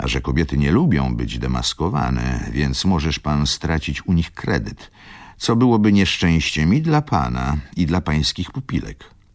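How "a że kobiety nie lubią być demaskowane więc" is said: usual speaking voice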